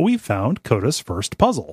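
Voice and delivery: acted condescending, swooping, talking-down sing-song. Quoting Davey remarking on a game puzzle: imitating Davey's condescending tone. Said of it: "almost condescendingly".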